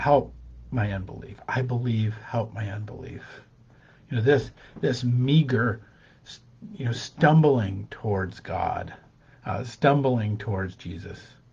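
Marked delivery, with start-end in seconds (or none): 0.0-3.2 mock pleading tone, exasperated, at the end of patience. Retelling the father's plea to Jesus: retelling an exasperated plea. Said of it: "exasperated at this point".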